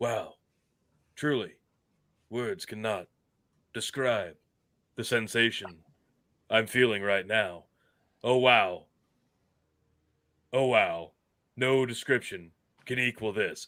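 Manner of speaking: put-on voice, stunned and halting. Acting out Shatner's flabbergasted commentary, in a shocked William Shatner voice. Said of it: "he's still talking in that Shatner voice".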